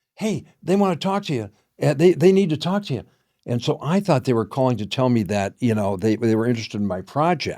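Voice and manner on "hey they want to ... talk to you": acted, eager, all-excited, pitched-up voice. Retelling an assistant's phone call, imitating an excited assistant. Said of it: "she was all excited".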